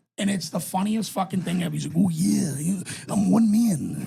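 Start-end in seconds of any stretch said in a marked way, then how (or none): 2.0-4.1 slow, drawn-out, rough wrestler voice. Retelling a bit read as Macho Man Randy Savage: Macho Man Randy Savage voice. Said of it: "These are Charles Manson's thoughts as Macho Man".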